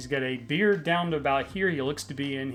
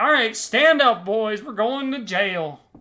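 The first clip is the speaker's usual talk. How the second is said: yelling, much higher and louder; 7 semitones higher, 8 dB louder than usual. Narrator voices a man taking the criminals to jail, yelling at them. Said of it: "just yells at him".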